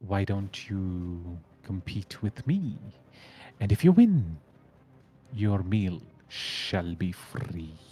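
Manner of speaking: hissing, very sibilant creature voice. Narrating a game scene, a tentacled creature speaks to the players in a very sibilant voice. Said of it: "in a very sibilant voice it says".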